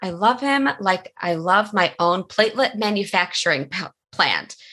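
normal talking voice

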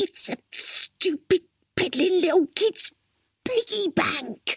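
very high, hissing voice. Crystal takes a deep breath and answers the question; hissed. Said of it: "she hissed".

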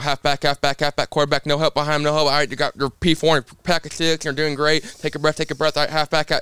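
rapid-fire, nonstop auctioneer patter, rattled off. Retelling what the spotter says during the race: imitating a spotter's rapid auctioneer patter. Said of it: "it sounds like an auctioneer".

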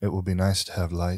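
put-on sorrowful child character voice. Voicing a child who has been crying and thanks the player: voicing a sorrowful child. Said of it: "there's, like, sorrow in his eyes".

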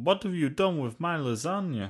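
heavy fake Italian accent. Discussing the live-action Garfield movies, quoting Garfield in a mock Italian accent. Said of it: "Is Garfield Italian now?".

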